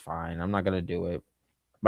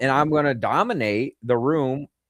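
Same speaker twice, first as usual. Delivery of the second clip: usual speaking voice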